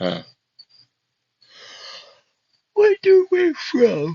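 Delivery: talking through a yawn. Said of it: "sorry, I was yawning".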